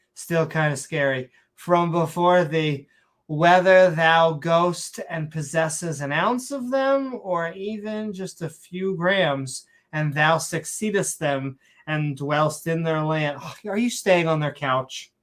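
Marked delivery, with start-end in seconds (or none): 1.6-13.4 slow, drawn-out, mock bad Shakespearean accent. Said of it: "saying it in a Shakespearean accent".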